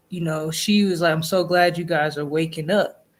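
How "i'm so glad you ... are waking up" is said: ordinary talk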